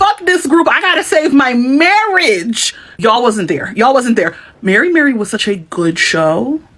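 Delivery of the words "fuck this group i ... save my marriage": high, worked-up, screaming and yelling outburst. Retelling a woman on a reality show saving her marriage: imitating someone screaming. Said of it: "she is crying, screaming, yelling. She's like".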